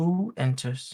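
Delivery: icy, cold, calm, even tone. Voicing a shadow figure in a chair who greets a visitor: cold, calm voice. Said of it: "You hear a cold, calm voice".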